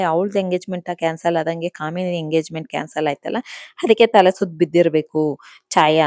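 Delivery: ordinary talk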